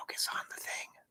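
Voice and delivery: unvoiced whisper.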